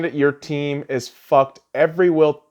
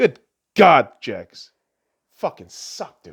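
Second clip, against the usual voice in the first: furious, fed-up ranting outburst; 2 semitones lower than usual. Ranting about a team after calling for the coach's firing: angry rant. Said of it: "Sound just like an angry bitch".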